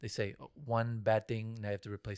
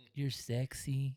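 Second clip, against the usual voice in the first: mock creepy tone, pitched higher; 4 semitones higher than usual. Acting out past self-affirmations to friends: put-on creepy voice. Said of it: "that was a creepy voice".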